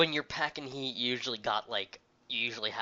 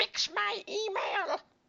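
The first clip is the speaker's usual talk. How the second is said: put-on very high-pitched, squeaky old woman voice; 5 dB quieter than usual. Describing a woman slamming a monitor on a store counter, old woman voice. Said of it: "that was an incredibly accurate old woman voice".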